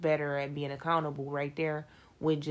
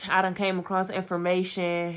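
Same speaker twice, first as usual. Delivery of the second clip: normal talking voice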